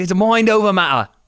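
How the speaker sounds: put-on Irish accent drifting into British. Acting out what a man said in Vegas, in a put-on British accent, meant as Irish. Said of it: "I don't know what accent I'm doing right now".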